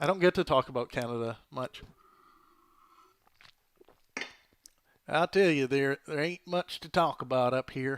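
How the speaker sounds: folksy American Southern accent. Talking about canada on a call-in show: southern accent. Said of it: "Why did I just do a southern accent?".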